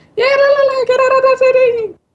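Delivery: shrill falsetto yell, very high-pitched. Inventing a game backstory, acting out wackos at the pyramids, imitating a falsetto shout. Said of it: "Why the falsetto?".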